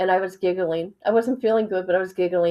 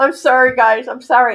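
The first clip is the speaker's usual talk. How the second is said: louder speech through laughter, cracking up; 5 semitones higher, 7 dB louder than usual. Apologizing to viewers for laughing, laughing while talking. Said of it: "I'm laughing".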